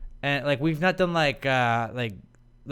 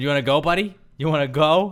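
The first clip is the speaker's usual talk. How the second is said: louder put-on New York accent; 5 dB louder than usual. Retelling what a man said before the other guy threw him down; New York accent. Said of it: "that New York accent".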